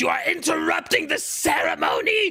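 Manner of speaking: very high, shrill, screaming wizard voice. Game master voicing the wizard shouting at the players: wizard shouting. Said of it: "the wizard is going is going to shout".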